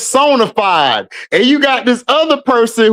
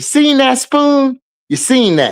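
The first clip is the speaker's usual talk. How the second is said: mock raised voice that stays soft. Retelling how she calls out to someone, imitating a soft raised voice. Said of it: "her raising her voice is like it's even softer".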